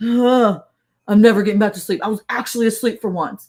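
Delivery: mock-angry grumbling, like someone just woken. Retelling how Eric woke up, the speaker imitates him getting mad. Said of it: "he like gets mad".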